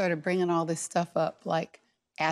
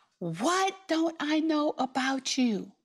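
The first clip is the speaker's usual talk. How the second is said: mock, very high, top-of-the-lungs furious scream; 9 semitones higher than usual. Retelling a fight, quoting her own question: retelling yelling at top of lungs. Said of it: "yelling at him at the top of my lungs".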